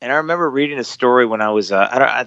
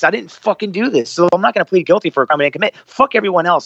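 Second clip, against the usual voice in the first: heated, worked-up, high-pitched ranting; 7 semitones higher than usual. Talking to two hosts about being called a liar, getting worked up. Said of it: "I'm getting a little worked up".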